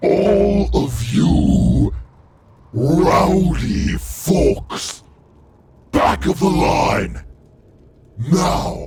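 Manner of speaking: loud, resounding booming voice. A game master voices a being addressing a crowd, booming voice. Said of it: "the voice will begin to boom".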